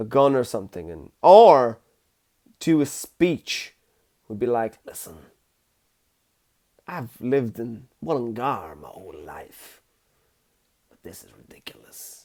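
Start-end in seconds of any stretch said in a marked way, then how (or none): 4.8-12.3 very quiet, low, hushed gangster murmur. Imagine the speech of a man whose voice doesn't suit him, sounding like he's in the mafia. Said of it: "he sounds like he's in the mafia".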